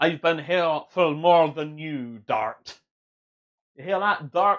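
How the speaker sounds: put-on Scottish accent, Scottish brogue. A streamer speaking to Dart; Scottish accent. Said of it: "I don't know why I keep going Scottish".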